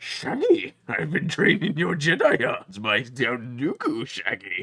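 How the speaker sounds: very loud, goofy, barking cartoon dog voice, wild pitch swings. The speaker slips into a Scooby-Doo voice, addressing Shaggy. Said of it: "Why am I doing Scooby Doo?".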